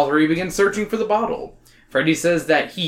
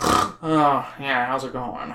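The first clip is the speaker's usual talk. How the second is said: mock sniffling voice, lower and quieter; 3 semitones lower, 4 dB quieter than usual. Imitating the author with a sniffle: imitating a sniffly voice. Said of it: "he'd always have a sniffle".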